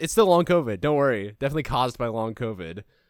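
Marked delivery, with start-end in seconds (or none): none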